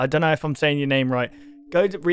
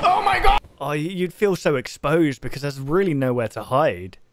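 ordinary delivery

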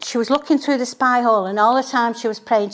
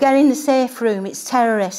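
ordinary delivery

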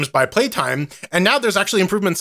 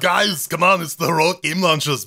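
bad put-on Austrian action-hero voice; 2 semitones higher than usual. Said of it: "with my awful Arnold accent".

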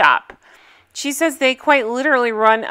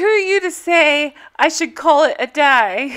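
bad, horrible, fake-sounding put-on British accent; 3 semitones higher than usual. Recapping a scene, quoting the loud background music in a horrible british accent. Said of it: "That's my horrible British accent".

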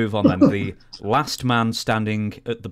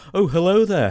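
put-on Liverpool accent, higher and louder; 10 semitones higher, 4 dB louder than usual. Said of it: "I could do a [name]".

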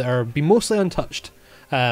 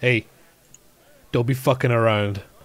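put-on half-orc character voice; 2 semitones lower than usual. Game narrator voicing a half-orc who grabs a drunken character's shoulder, half-orc character voice. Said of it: "The half orc ... he goes".

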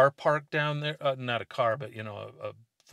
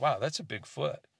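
mock casual, unbothered, nonchalant, offhand tone; 5 dB quieter than usual. Retelling a companion's reaction to huge footprints: imitating a nonchalant remark.

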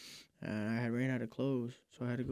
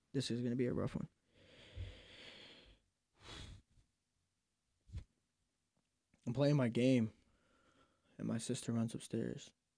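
holding back tears. Telling another speaker about a relative's overdose, holding back tears. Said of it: "I'm trying not to tear up".

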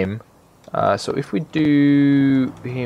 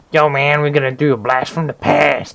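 mock drunken hobo voice, slower. Opening a video, redoing the intro in a put-on alcoholic-y hobo voice. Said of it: "I sound like a hobo or something".

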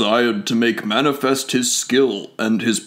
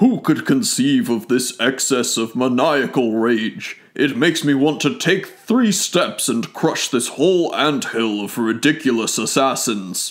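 plain reading voice

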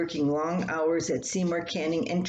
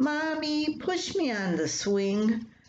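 put-on high, whiny child voice; 8 semitones higher than usual. Narrator voices a daughter calling to her mother, whining. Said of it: "Rachel whined".

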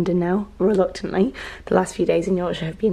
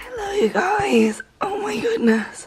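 very high, failing, barely-there voice; 14 semitones higher than usual. Vlogger greeting viewers at the start of a new day, voice barely coming out. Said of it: "I have got the worst voice. This is me trying to talk".

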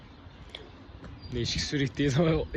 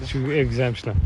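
usual speaking voice

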